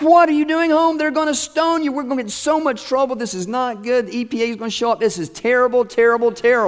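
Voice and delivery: mock high, loud scream. Speaker retells a wife finding her husband home unexpectedly: imitating a woman screaming. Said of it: "She's screaming".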